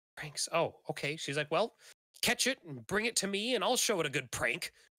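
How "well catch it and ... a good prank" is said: put-on high, cranky, crotchety old woman voice. A game master voices an old woman bursting out of her house, in an old woman voice. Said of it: "you see an old woman like burst out of the door of this house".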